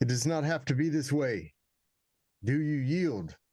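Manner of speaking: high, loud, yelled-out voice. A player's character yells out to the goblins. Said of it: "gonna yell out".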